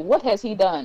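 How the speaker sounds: normal talking voice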